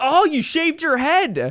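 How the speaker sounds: mock very high-pitched, loud, carrying exclamation. Retelling a classmate pointing out a shaved head: imitating a loud classmate. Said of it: "he was so loud about it".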